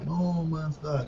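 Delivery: voice going under, as if drowning. Mimicking how the other speaker said a game title, drowning voice. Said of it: "you sort of said it with a sort of drowning voice".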